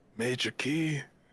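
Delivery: small, sheepish, meek, timid voice. Acting out waking from a nightmare and answering a wife: meek, timid voice. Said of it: "meekishly speak to her".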